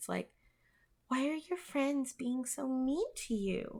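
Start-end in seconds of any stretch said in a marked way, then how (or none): 1.1-3.8 small, squeaky, meek, submissive voice. In a very dark room, a voice speaks to you in a squeaky, submissive little voice. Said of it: "you hear a squeaky, very submissive little voice".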